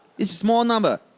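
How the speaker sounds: high, loud mock Chinese accent. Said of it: "You wanna hear my Chinese".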